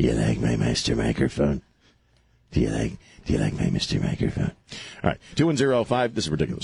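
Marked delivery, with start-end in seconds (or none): 0.0-4.5 very low, creaky, rough and creepy voice. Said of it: "Mister Creepy".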